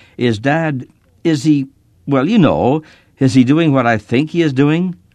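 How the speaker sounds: strained calm voice. A boy asks his mom about their dad, trying to keep his voice calm. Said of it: "trying to keep my voice calm".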